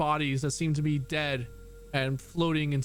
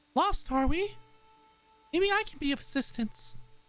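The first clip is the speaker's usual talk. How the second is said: very high, gentle, kindly, helpful lilt; 12 semitones higher than usual. A creature hovering above a ship's deck addresses the crew in a soft voice. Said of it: "In a soft voice".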